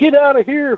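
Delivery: very high-pitched screaming. Retelling a landowner's wife ordering detectorists off: imitating a screaming wife. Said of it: "starts screaming".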